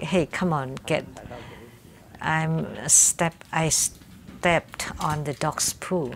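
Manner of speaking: plain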